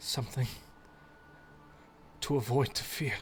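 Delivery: ever so quiet, faint whisper. Voicing a half-conscious figure murmuring words: ever so quiet whisper. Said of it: "just ever so quietly over her lips".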